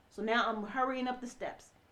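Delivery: normal talking voice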